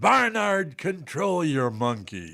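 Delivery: very slow, high, swooping drawl, stretched words. Retelling what Harry said after being teased: Harry Caray impression. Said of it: "that's an amazing impression".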